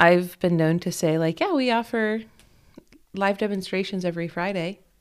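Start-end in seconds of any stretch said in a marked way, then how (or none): 1.4-4.8 mock sarcastic tone. Retelling a past reply to a question about babies: imitating own sarcastic reply. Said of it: "I'm kinda sarcastic about that one".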